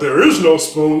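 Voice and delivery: a little slow, low, dim-witted delivery. Recapping a film scene and mocking the hero's line: dim-witted Neo impression. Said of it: "a little slow".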